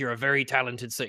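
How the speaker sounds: put-on pirate captain voice. Acting out a character putting Isildur on a break, in a pirate captain voice. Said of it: "he has to have a pirate captain voice".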